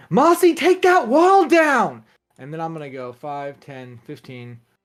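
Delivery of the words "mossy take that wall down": shouting in a character voice. Shouting an order to an ally during a fight: shouting in character. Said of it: "I'm going to shout".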